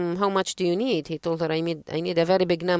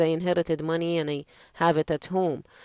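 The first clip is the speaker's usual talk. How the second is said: plain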